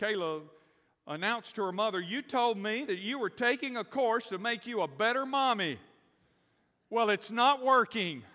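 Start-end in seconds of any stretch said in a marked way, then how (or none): 2.0-8.2 put-on loud, high, tearful little girl voice, crying. Retelling how Kayla, in tears, announced to her mother, imitating Kayla's loud tearful outburst. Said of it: "with tears running down her face and in a loud voice".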